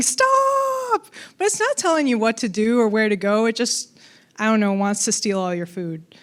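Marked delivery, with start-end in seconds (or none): 0.0-1.1 high, squealing mock squirrel yell. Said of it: "this squirrel standing in front of me yelling".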